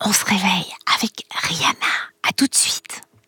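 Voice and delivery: hushed speech. Very early in the morning, speaking more softly to someone waking up. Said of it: "Je vais parler plus doucement".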